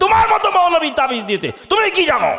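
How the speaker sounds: angry, quick retort tone. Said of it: "রেগে বলল".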